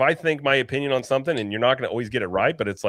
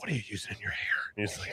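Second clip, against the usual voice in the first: very quiet, close, confiding whisper; 4 semitones lower, 12 dB quieter than usual. Acting out asking someone close about their hair product: acting out a whisper. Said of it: "you just whisper".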